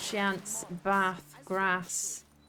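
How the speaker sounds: broad Yorkshire vowels on chance, bath, grass. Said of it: "I should bring in me, um, my Yorkshire".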